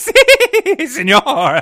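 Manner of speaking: put-on cackling, Puerto Rican accent. Performing a book character's line on request: cackling in a thick Puerto Rican accent. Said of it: "Midge cackled in a thick Puerto Rican accent".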